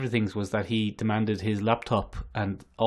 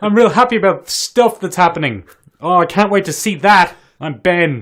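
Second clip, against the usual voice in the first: mock loud, booming, excited voice, getting louder; 9 semitones higher, 13 dB louder than usual. Imitating the other speaker's loud booming voice: imitating a loud booming voice. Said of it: "Now you're blasting it".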